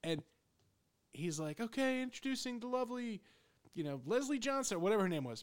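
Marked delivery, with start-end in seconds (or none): 1.6-4.8 big, very high rodeo announcer voice. Retelling a rodeo announcer welcoming the crowd: imitating announcer's powerful voice. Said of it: "he's got this powerful voice".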